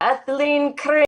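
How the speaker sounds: huge, booming, high call, acted out. Retelling a name called out on the morning program, in a big booming voice. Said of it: "I hear in this big booming voice".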